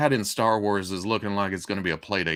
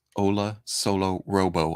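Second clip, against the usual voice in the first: slow, careful, deliberate word-by-word delivery. Greeting viewers, careful not to trip over the vowels, said slowly. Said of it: "I had to say that slow".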